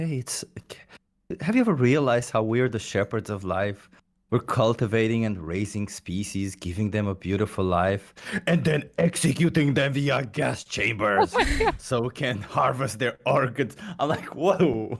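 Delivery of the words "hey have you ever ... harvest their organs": put-on chatty elderly old woman's voice. Imagining an old woman talking in the supermarket, imitating an old woman. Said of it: "this old woman sitting there talking like".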